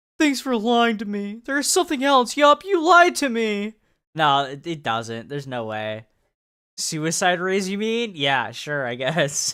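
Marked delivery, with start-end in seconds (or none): 0.2-3.7 very high, loud, put-on sorrowful voice. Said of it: "my sad voice".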